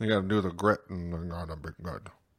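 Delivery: soft, barely-talking voice. Talking baseball, speaker impersonates an old-school manager, barely talking. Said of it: "my impersonation of an old school manager. Like, barely talking".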